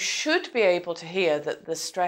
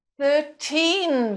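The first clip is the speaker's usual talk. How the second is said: put-on thirteen with weight on the second syllable -teen; 9 semitones higher than usual. Correcting thirty pounds to thirteen pounds: stress on teen in thirteen. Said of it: "they will stress the teen part".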